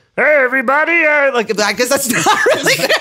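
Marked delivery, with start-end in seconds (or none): 0.2-1.1 high-pitched, froggy puppet voice. Asked to hear it, the speaker shows off their Kermit the Frog voice. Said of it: "everyone's told me that I'm just Kermit".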